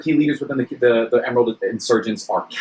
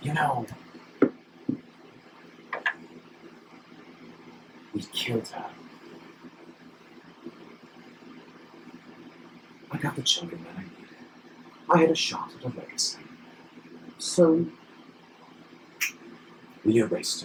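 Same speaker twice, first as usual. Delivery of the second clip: close, breathy, menacing, very hushed whisper; 3 semitones higher, 13 dB quieter than usual. A narrator voices a man leaning close to whisper in the listener's ear: whispering. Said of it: "he whispers in your ear".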